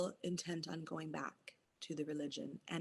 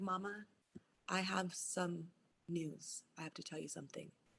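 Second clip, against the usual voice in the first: put-on serious tone, quieter; 6 dB quieter than usual. Retelling her youngest son announcing he has news, imitating his serious tone. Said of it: "And he's all serious".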